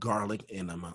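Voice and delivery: hushed whisper. Repeating a phrase after another speaker asks what: whispering. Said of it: "I'm whispering as if".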